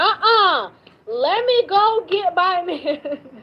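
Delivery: high, very slow, drawn-out woman's voice. Retelling how these women react, imitating these women. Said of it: "These women be like".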